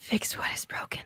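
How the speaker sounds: hushed, eerie, ghostly whisper close in the ear. Voicing a presence that whispers into a player's ear: whispering presence. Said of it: "you hear the whisper into your ear".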